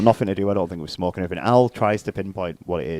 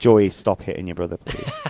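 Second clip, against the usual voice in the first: ordinary talk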